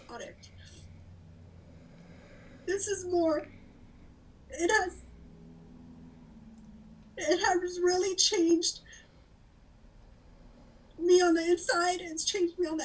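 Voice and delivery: speaking through tears. In a scene, a character asked why they are crying answers: crying while talking. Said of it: "Why are you crying".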